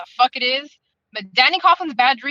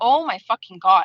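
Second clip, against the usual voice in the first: low, furious, angry outburst; 4 semitones lower than usual. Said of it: "I was just so angry".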